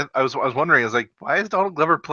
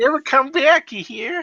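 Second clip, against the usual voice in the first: very high, cartoonish voice, pitched way up; 13 semitones higher than usual. Repeating the line in a cartoon voice: Bugs Bunny voice. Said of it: "That's a more Bugs Bunny than Peter".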